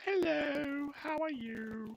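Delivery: deliberately terrible voice, very high, very slow, loud. A streamer imagines his girlfriend walking in: bad impression of his girlfriend. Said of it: "my worst ever possible uh, impression of my girlfriend".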